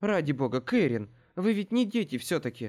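ordinary delivery

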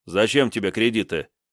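ordinary delivery

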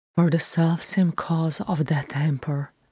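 ordinary delivery, nothing marked

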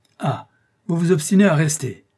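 loud exasperated outburst. An exasperated count shouts at an insistent visitor: exasperated shout.

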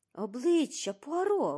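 loud, high, startled, alarmed cry. Narrator reads the first-person narrator pointing at the window for Poirot, exclaiming. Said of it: "вигукнув я".

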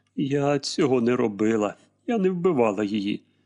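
ordinary delivery, nothing marked

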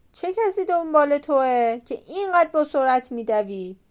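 jeering, scornful, mocking, taunting tone. Narrator reads a giant calling to a man running toward him, mocking. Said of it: "غول با مسخرگی گفت".

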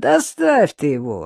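heated, exasperated, fed-up outburst. A woman on the phone shouts in exasperation, then hangs up. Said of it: "в сердцах крикнула [name]".

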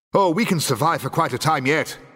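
resounding boom. A character answers a companion's sarcastic remark, booming. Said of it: "boomed the Doctor".

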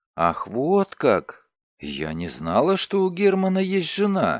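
disbelieving, distrustful. A woman hears another introduce herself as a man's wife, distrustful. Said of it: "с недоверием произнесла Глория".

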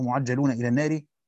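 usual speaking voice

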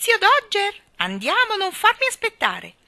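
piercing, shrill, very high and loud shout. Calling from inside to Uncle Dodger: shrill call from inside. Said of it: "gridò da dentro la sua voce acuta".

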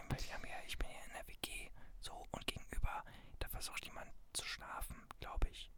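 speaking quietly. Speaker in a shared flat while someone across tries to sleep, speaking quietly. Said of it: "ich muss ja ein bisschen leiser sein".

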